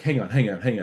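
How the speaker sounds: harsh, mean, cutting delivery. Retelling how a creative director reacted to a presented script: imitating a mean creative director. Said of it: "he'd take it and be like".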